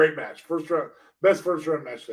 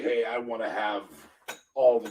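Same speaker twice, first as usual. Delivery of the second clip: usual speaking voice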